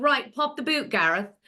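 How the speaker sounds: casual put-on English accent, slipped into. Retelling own past words to ex-husband: imitating own past english accent. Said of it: "I couldn't control my English accent".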